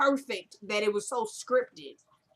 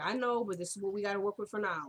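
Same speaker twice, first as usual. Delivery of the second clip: ordinary delivery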